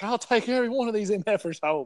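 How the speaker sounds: high, livid, furious outburst, losing it completely. Retelling a man's reaction after the team trashed a room, imitating someone furious. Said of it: "Larry was like so mad".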